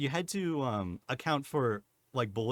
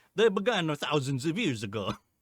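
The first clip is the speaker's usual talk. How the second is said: put-on bouncy Italian accent. Mocking a game character's narration, in a bouncy imitation of Ezio's Italian accent. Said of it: "it's so weirdly bouncy".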